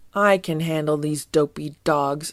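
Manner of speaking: ordinary talk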